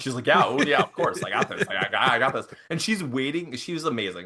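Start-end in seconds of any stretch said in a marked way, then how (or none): 0.3-2.5 mock words bubbling with laughter while talking. Retelling the fiance's reply to an urgent favor, imitating someone laughing while talking.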